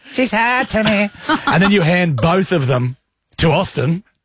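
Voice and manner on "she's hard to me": high-pitched, put-on, whiny little kid voice. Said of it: "Yeah, correct".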